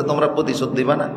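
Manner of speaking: ordinary talk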